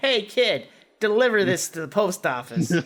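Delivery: put-on pure, strong Brooklyn New York accent. Quoting his Brooklyn-raised dad's instructions to him, in a New York accent. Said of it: "he has a New York accent".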